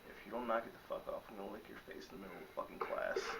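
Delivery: muttering under one's breath. Sitting in class, warning a friend beside them, muttered under breath. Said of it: "like under my breath to her".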